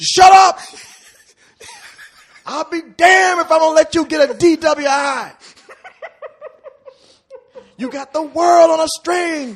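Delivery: very high, very loud, shrill yelling rant. Acting out a scene where someone yells at a driver: imitating Samuel L. Jackson yelling. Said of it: "Samuel Jackson's gums while he's yelling at you".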